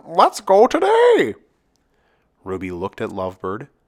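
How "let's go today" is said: shrill, loud, high, squawky bird voice. Narrator reading a story aloud, voicing Lovebird: squawky Lovebird voice. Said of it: "in a squawky voice Lovebird said".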